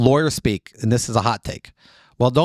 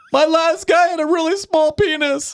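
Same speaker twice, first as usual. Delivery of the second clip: put-on screaming, very high. Acting out what to yell to chase a roommate out: mock screaming during sex. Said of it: "Start screaming stuff like".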